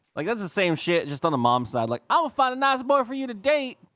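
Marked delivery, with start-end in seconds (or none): 2.1-3.8 horrible put-on Southern accent, very high. Describing the stereotypical movie mom, the speaker voices her in a horrible Southern accent. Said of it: "I apologize for doing this like horrible Southern accent".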